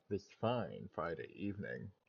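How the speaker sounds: deliberately soft, quiet, hushed voice. Opening a Friday evening stream, the host greets everyone, deliberately quiet voice. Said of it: "I'm trying to sound fucking quiet".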